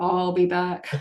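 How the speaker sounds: put-on movie cyborg voice. Suggesting what clients could say to their dog when leaving, Terminator voice. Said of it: "put on your best Terminator voice and say".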